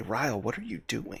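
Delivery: very quiet muttered aside under the breath. Playing a character walking a captive away: muttering under breath. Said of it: "under my breath".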